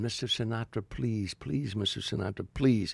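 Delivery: scream kept small, mild and toned down. Retelling a fan calling out to a star: imitating a woman screaming. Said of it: "she started screaming".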